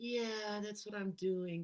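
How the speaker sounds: uninterested, can't-be-bothered tone. Showing how someone talks to themselves about their goals; bored voice. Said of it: "kind of voice tone".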